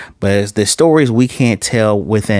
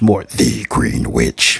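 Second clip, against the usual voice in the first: demonic-sounding voice; 10 semitones lower than usual. Recapping a show, retelling a character's answer to a question; demonic Green Witch voice. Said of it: "Very demonic voice".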